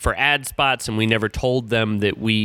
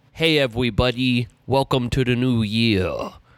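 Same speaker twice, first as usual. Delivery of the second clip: put-on cartoon character voice. Greeting everybody at the start of the new year in Boss Baby voice. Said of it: "the Boss Baby voice".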